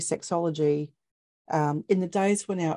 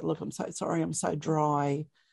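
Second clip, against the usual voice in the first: put-on tearful crying voice, quieter; 4 dB quieter than usual. Retelling bursting into tears with a partner: retelling a tearful apology. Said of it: "I just burst into tears and just said".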